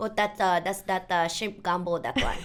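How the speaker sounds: put-on playful Filipino accent.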